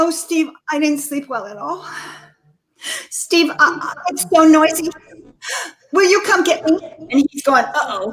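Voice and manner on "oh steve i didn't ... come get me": put-on anxious, worried voice. Retelling what a mother said to her son on the phone, imitating an anxious voice. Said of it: "She just fell into anxiety".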